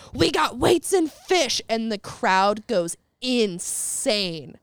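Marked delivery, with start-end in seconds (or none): 0.2-1.7 put-on, loud, high hollered call. Retelling what a man yelled out to the crowd, retelling a yell. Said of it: "he just yells out".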